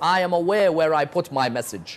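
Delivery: normal talking voice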